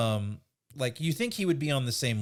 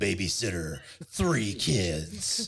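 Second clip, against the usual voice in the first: movie trailer announcer voice, lower; 4 semitones lower than usual. Riffing with the others, the speaker does a movie trailer voiceover. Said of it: "get the movie guy voiceover".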